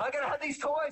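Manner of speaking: put-on high, whiny, demanding child voice.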